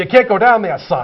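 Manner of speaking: bad, amateur put-on New York accent. Quoting an usher at a ball game: bad New York accent. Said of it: "with the New York, my bad New York accent".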